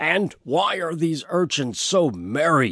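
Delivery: insistent, demanding tone. Reading a story, the grand superintendent questions the granary workers: demanding. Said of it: "the grand superintendent demanded".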